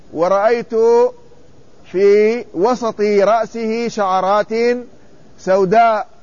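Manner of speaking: ordinary talk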